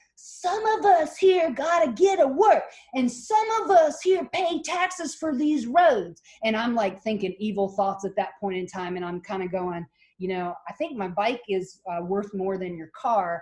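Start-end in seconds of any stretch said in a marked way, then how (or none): 0.2-6.2 put-on shrill, very high, slow angry yell. A cyclist recounts a driver crowding their bike, imitating a driver yelling. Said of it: "And he's screaming at me".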